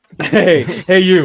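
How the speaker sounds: loud, mad, combative, angry call-out. Retelling how a wrestler reacts to a rival, imitating Punk getting mad. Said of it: "him just going like".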